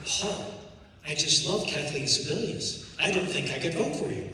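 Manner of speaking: plain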